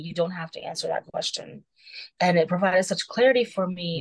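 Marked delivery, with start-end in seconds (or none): 0.0-1.6 quiet, soft, hushed whisper. Retelling what a partner said during a presentation: imitating a whisper. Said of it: "he just whispered to me".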